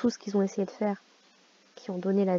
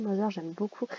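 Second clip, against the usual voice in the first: ordinary delivery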